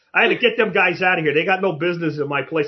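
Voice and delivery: put-on Boston accent. Quoting a man talking about a restaurant account of his, in a thick boston accent. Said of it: "He has that whole Boston, Mass accent".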